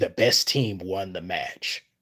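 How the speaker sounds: soft sports match announcer voice. Retelling what he said while talking as the match announcer, announcer voice. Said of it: "I was just talking as the announcer".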